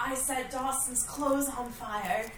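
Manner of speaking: very quiet, very soft, secretive hushed half-whisper. Grabbing another woman's arm, a character confides what she did; half-whispering. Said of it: "And she whispers".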